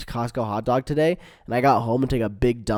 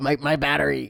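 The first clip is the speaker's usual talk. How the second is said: put-on cartoon scientist voice, higher; 3 semitones higher than usual. Imitating a cartoon character talking to Morty: Rick impression. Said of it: "He's like, he's like".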